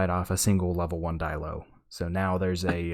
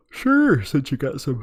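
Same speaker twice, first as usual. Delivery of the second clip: words coming out through a loud yawn; 8 semitones higher, 7 dB louder than usual. Answering the other speaker's question: yawning while talking. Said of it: "I'm yawning".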